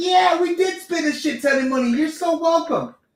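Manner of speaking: shrill, very high, crowd-style hollering. Complaining about record pay-per-view gates, mimicking everybody screaming and yelling. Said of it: "everybody's screaming and yelling like".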